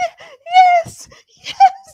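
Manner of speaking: crying, tearful voice, very high and very loud. Retelling a woman's answer to a marriage proposal, imitating someone crying. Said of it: "She was crying".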